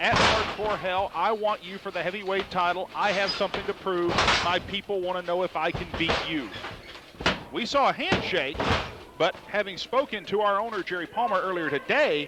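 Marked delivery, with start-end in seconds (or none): none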